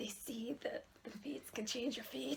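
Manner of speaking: put-on Scottish accent. Reading a story aloud, asked by a listener to do the scottish accent. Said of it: "Do the Scottish accent".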